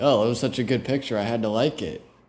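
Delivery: sarcastic delivery. Showing how to answer someone asking about a liked photo: sarcastic. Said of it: "you just gotta act, like, sarcastic".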